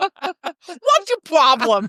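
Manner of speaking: put-on New York accent. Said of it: "New York accent".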